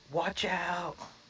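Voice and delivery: loud yelling. Casting a spell in character, warning a commoner: yelling a warning. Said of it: "it's almost like I'm yelling at the commoner".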